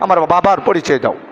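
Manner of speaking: ordinary talk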